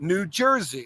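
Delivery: New Jersey with stress on jers. Explaining how a place name is said: stress on Jersey. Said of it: "The emphasis on "jers"".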